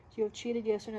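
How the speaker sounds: ordinary talk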